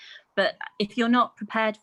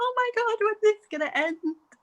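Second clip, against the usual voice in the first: high, panicked cry of dread.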